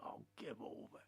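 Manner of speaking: soft, dismissive, scoffing whisper.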